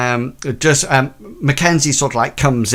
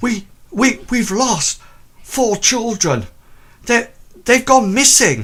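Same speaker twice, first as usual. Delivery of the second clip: winded, panting, very high, swooping breathless stammer; 11 semitones higher than usual. Voicing a vicar reporting missing children: acting out of breath. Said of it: "out of breath, he sort of, like, says".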